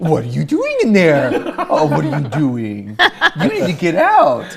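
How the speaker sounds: very slow, drawn-out, swooping sing-song homeowner voice. Imitating Kevin catching someone who broke into his house: imitating Kevin. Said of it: "you know what he'll say?".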